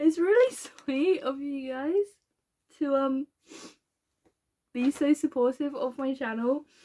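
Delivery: crying while talking, tearful voice. Thanking viewers for their support, crying while talking. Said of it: "I'm trying really hard not to keep crying".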